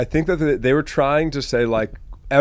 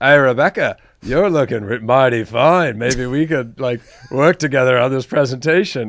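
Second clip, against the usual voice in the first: imitated Australian accent; 3 dB louder than usual. Retelling what a man in a training video said: imitating an Australian accent. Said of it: "he was Australian".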